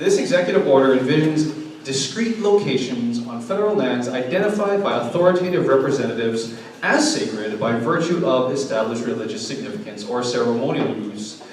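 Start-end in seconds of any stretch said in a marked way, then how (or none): none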